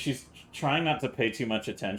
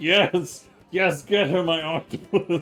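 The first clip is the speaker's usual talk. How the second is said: loud, slow, very drawn-out, triumphant; 7 semitones higher, 6 dB louder than usual. Voicing Dixie commanding a summoned octopus: triumphant commanding cry. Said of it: "sitting there triumphantly commanding the restraints".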